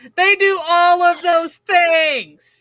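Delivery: slow, high-pitched yelling.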